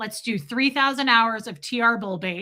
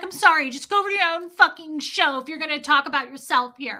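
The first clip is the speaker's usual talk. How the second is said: put-on frantic woman's voice, higher; 6 semitones higher than usual. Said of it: "Marilyn flipped the fuck out on her".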